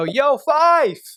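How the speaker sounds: mock frat-boy yell, very high and loud. Retelling calling out to someone walking away: imitating himself yelling. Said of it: "I yell out".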